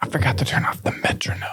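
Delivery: hushed whisper. A podcast host at the start of an episode, whispering. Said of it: "Why am I whispering?".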